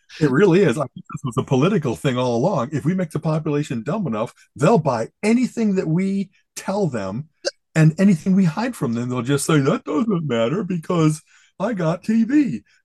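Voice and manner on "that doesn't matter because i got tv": slow, mocking put-on drawl. Ranting about a dumbed-down public, quoting them in a mocking voice. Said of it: "I usually don't go mocking voice".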